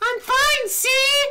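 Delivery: put-on high, bad girly voice. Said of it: "go back to the shitty voice".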